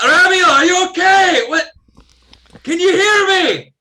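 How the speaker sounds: very loud, very high, drawn-out yell. Yelling down a hole after a party member fell: yelling down a hole.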